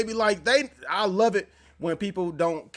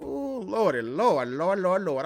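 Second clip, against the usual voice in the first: put-on very slow, very drawn-out grandma voice. Commenting as Grandma gets tased, exclaiming in a grandma-like voice. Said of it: "I sound like my grandma".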